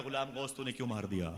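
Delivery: ordinary talk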